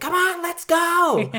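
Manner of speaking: very high, very slow, drawn-out angry hollering. Retelling a movie scene where a girl keeps telling others to hurry: imitating an angry girl yelling. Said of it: "the angry girl is just yelling".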